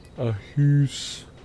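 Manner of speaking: exaggerated fake Canadian accent. Showing one of only two phrases he can do, made-up Canadian accent. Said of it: "those are the only two things I can say with it".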